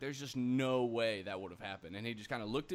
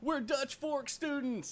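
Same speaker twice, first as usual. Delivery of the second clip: mock very high screaming shout; 14 semitones higher, 3 dB louder than usual. Acting out Finley leaning out of the car window, imitating Finley screaming. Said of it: "Finley leans out the window and just screams".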